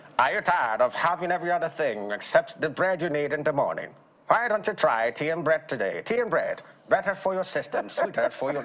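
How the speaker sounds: put-on old-time radio commercial voice. A speaker says he loved fifties adverts and mimics one, in a 1950s advert voice. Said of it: "they could sound something like".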